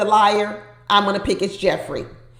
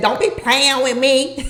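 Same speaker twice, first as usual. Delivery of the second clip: put-on, deep-voiced Southern twang; 4 semitones higher than usual. Recounting the new voice that came out on Jeffri, doing Jeffri's deep Southern twang. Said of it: "that Southern twang that came out on Jeffri".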